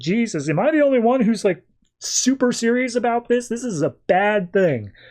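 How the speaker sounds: acted high, panicky, worked-up, freaked-out outburst. Retelling a comic character's line to the group: imitating someone freaking out. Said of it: "he's just, like, freaking out".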